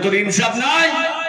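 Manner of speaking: high, heated, angry, indignant tone.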